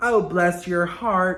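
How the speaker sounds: attempted Southern accent. Speaker tries a southern accent while saying they can't: attempted southern accent. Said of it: "I can't do a southern accent".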